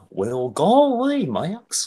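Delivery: goes up high and swoops around. Pushed by the others into a requested impression: Goofy voice. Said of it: "So clearly you want to do Goofy".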